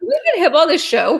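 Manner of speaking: high, loud laughing aside. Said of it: "I'm laughing".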